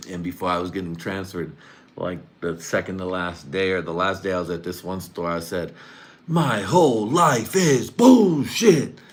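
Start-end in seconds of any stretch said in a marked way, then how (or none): 6.3-8.9 put-on very slow, loud, drawn-out, high belted shout. Retelling a line said at work: imitating own loud yell. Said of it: "you said that shit so loud".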